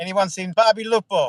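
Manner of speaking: terrible, exaggerated put-on Italian accent. Doing a bit while the other speaker mocks it: bad Italian accent. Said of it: "your your Italian accent's terrible".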